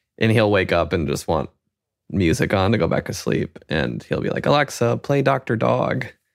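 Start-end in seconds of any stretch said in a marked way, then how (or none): 4.5-6.1 tiny put-on voice, very drawn out. Retelling how he asks alexa for music in the middle of the night: his little voice. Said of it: "in his little voice".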